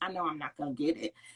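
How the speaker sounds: soft, hushed stage whisper aside. Retelling what mom half-whispered at the store checkout: imitating a half-whisper. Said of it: "she would whisper over to me".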